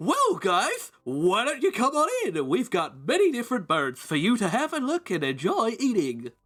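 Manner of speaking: over-the-top peppy, cheerful tone. Voicing a costumed bird restaurant greeter inviting guests in: overtly peppy. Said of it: "an overtly peppy human".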